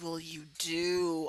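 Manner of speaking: slowed-down voice. Retelling how a man, asked to say it slower, replied: slowed-down voice. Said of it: "he slowed his voice and said".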